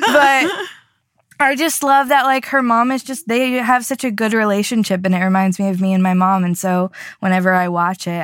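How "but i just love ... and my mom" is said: tearful voice, crying while talking. Talking about Mamma Mia and her mom, the speaker is tearful and crying. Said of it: "I can't believe I'm crying about Mamma Mia".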